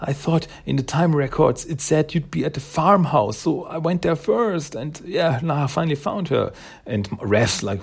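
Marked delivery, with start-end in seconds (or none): 0.0-6.5 acted breathless voice, higher. Retelling a comic scene where a character rushes in: imitating someone out of breath. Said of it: "totally out of breath".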